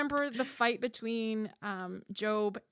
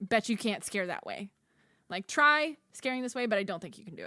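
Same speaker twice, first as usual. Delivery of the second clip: ordinary talk, nothing marked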